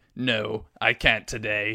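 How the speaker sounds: slow, dark put-on villain voice. You imagine the Sith turning something down; give your best Palpatine impression. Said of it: "that's my best Palpatine impression".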